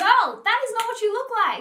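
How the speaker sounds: high, loud calling-out voice.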